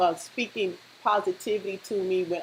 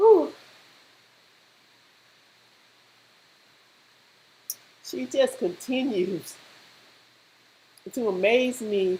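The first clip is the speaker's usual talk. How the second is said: choked-up voice, breaking and catching with emotion; 3 semitones higher than usual. Praising a niece who inspires them, choked up. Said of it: "I'm starting to get choked up".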